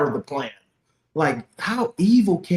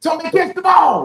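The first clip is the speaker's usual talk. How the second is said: mock yelling, higher and louder; 13 semitones higher, 6 dB louder than usual. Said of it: "It's like screaming at the T V".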